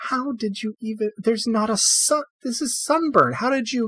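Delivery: very high, worried, fretting fussing voice. Voicing a healer fretting over an injured arm: worried mother fussing. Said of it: "worried mother drill".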